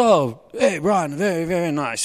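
slow, posh upper-class voice. Retelling how the Bishop of London came into the prayer room and greeted you, posh Richard Chartres voice. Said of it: "he's all posh, and speaking to me all posh".

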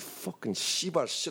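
acted muttering under breath. Retelling getting into his car while watching him, retelling a mutter under breath. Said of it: "And I'm under my breath".

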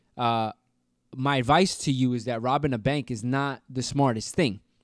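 normal talking voice

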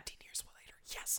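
very quiet, hushed, whispered words. Speaker describing a film's extra ending shot, whispering. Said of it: "I don't know why I'm whispering this".

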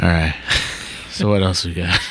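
deflated, beaten-down voice. Moving on to the next topic with co-hosts, in a defeated tone. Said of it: "You sound so defeated".

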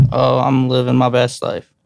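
unhappy, joyless tone. A podcast co-host, asked how he's doing, answers sounding unhappy. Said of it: "You don't sound happy at all".

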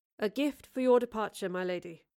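plain reading voice

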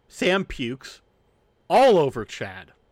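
usual speaking voice

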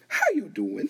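high, showy put-on voice. Showing how a talk show host says her catchphrase: Wendy Williams voice. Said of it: "You know how Wendy Williams goes".

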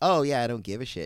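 usual speaking voice

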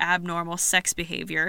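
normal talking voice

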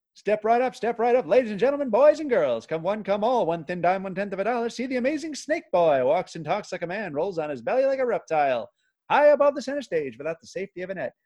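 carnival barker voice. After being told he sounds like a victorian circus barker, doing a carnival barker voice. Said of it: "Carnival barker".

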